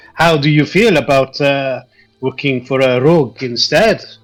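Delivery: put-on French-style accent. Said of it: "That's a very good accent".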